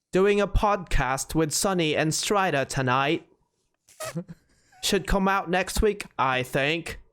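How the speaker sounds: put-on English accent. Asked to show his English accent, reading a Discord message aloud: English accent. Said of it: "fucking English accent?".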